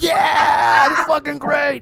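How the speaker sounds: howling, high-pitched shout full of laughing delight. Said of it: "I'm howling like it's a movie".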